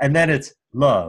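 ordinary talk

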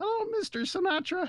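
tiny, squeaky voice, very high. Retelling stunned greeting of Mr. Sinatra as a kid: little squeaky voice. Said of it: "in my little squeaky".

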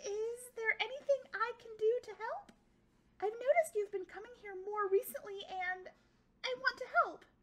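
anxious, very loud, very high-pitched little squeaky voice. Reading a story, the narrator voices little Kwame speaking to Nuru: nervous, squeaky voice. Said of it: "The little Kwame spoke in a nervous, squeaky voice".

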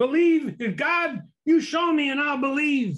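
mock screamed-out delivery, very high pitch. Speaker retells a story of a man on a mountain shouting at heaven; imitating a man screaming. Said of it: "he screamed out".

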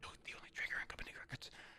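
fast, gruff, whispered deep-hero voice.

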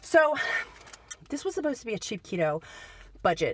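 still catching breath between words, winded. Back from shopping on a Saturday, talking to viewers, out of breath. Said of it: "I'm out of breath, y'all".

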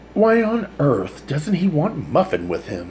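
incredulous, disbelieving, high swooping tone. Mother asks Peter as he closes the door, incredulous. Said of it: "Mother asked incredulously".

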